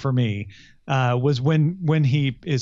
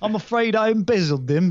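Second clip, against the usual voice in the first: put-on British accent, pitched up; 8 semitones higher than usual. Co-host joins a bit about telling unpleasant news: British accent. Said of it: "I'm going to tell you in a British accent".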